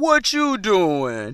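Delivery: put-on deepest, slowest old man voice. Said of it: "the deepest, slowest voice".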